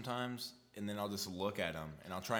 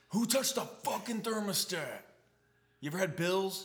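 furious, angry, very high yelling; 10 semitones higher, 6 dB louder than usual. Imagining someone messing with the thermostat, yelling in dad voice. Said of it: "I'm about to use my dad voice".

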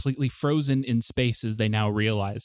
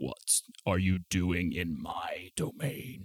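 deep, hushed, slow, drawn-out great dragon voice; 4 semitones lower, 8 dB quieter than usual. A red dragon, now fully awake, questions the party, red dragon voice. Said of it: "Important to note that it is a red dragon that you see sleeping upon this bed of coins".

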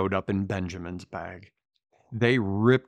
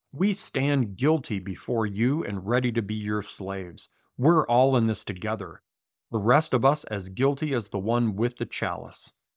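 normal talking voice

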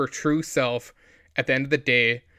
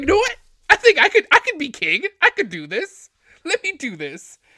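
very high, loud, swooping sing-song character voice; 6 dB louder than usual. Retelling a favourite scene, imitating Edmure Tully: imitating Edmure Tully. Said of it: "he's like".

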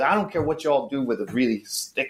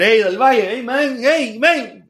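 put-on energetic, loud, very high Puerto Rican accent; 11 semitones higher, 5 dB louder than usual. Retelling what an old friend told him, in Raul Rivera's Puerto Rican accent. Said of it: "with that Puerto Rican energy, right? That accent".

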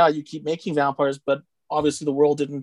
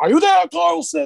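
put-on shouting, much higher, louder; 14 semitones higher, 5 dB louder than usual. Speaker retells a movie's helicopter scene to friends, Dr. Falada shouting. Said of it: "he's shouting at them".

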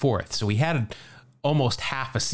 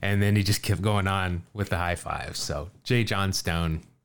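ordinary delivery

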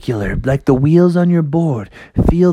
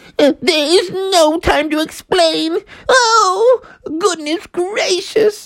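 squeaky, very high-pitched cartoon rabbit voice. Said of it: "And the rabbit was like".

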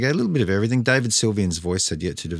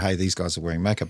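ordinary talk, nothing marked

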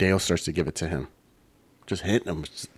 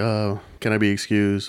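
ordinary talk, nothing marked

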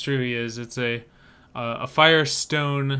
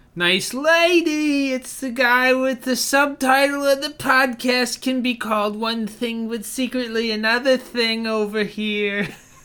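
put-on silly, stupid voice, higher pitch; 10 semitones higher than usual. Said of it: "when we do this stupid voice".

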